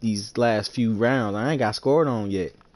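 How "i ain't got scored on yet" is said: ordinary talk, nothing marked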